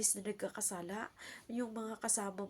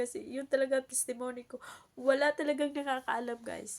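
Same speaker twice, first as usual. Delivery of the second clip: raised, tearful speech through open tears; 4 semitones higher, 7 dB louder than usual. Sharing her testimony with viewers, the speaker apologizes: crying while talking. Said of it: "I'm sorry, I'm crying".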